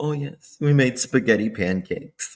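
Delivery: motherly, family-warm tone. Imitating how KK talks when she wants to sound motherly: imitating KK's motherly voice. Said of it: "she talks like this when she, she wants to sound motherly".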